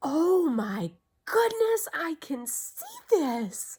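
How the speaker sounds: very loud, very high burst of amazement. Retelling her reaction in the store after reading a card: retelling her amazed reaction. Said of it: "the whole amazement in my voice".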